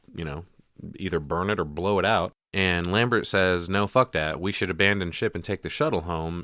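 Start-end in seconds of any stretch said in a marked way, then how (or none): none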